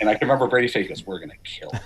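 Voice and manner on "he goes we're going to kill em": hushed, breathy whisper. Retelling a quiet remark made off mic: retelling a whisper. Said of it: "He said it like a whisper".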